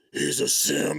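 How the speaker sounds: secretive, hushed little whisper. Retelling a sister naming a costume after a party: imitating sister's whisper. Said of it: "she came up behind me and she goes".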